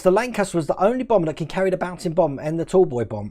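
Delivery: normal talking voice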